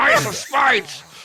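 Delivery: very high, strained bulldog voice. Panelists discussing the words to Ace of Spades; constipated bulldog voice. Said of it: "a sort of constipated bulldog voice going".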